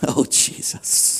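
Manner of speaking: breathy sighing words, barely whispered, very hushed. Demonstrating to listeners how the speaker sighs; sighing. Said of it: "I sigh like this".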